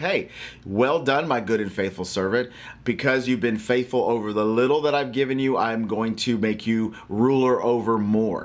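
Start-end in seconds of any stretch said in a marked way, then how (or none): none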